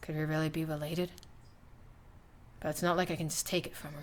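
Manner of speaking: muttering under one's breath. A character thinking aloud before a companion asks what they're mumbling, mumbling to oneself. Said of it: "What are you mumbling about?".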